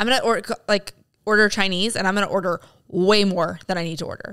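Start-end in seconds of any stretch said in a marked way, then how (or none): none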